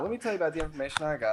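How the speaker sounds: very fast, rapid-fire, rattled-off patter. Doing an impression of a fast-talking character: very fast talking. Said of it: "I could do an impression of a fast-talking character".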